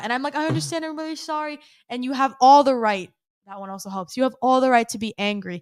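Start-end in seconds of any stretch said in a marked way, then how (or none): 0.4-1.6 mock deeply heartfelt, very emotional, high-pitched. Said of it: "I say it very, very emotionally".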